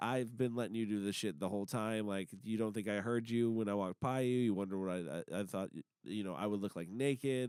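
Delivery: low, soft, menacing taunting tone.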